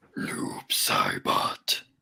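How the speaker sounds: harsh, grating, rough and creaky put-on voice. Naming a character pick in a Noob Saibot voice. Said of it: "You do that voice so well".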